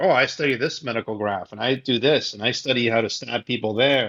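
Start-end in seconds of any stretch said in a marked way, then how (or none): none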